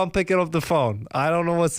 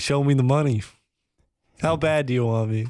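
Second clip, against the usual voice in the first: normal talking voice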